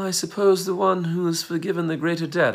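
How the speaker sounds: put-on haughty upper-class English accent. Retelling a story, voicing Simon as he answers a question: British accent. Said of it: "I don't know why he had a British accent".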